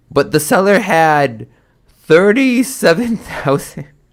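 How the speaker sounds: talking through laughter. Reading out an account seller's listing, laughing while talking. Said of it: "I can't stop laughing".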